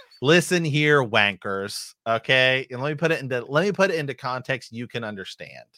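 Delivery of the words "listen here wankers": put-on irate, annoying, complaining American accent. Acting out a future phone complaint to an airline: put-on annoying American complaining. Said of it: "complain like a, a very annoying, uh, American".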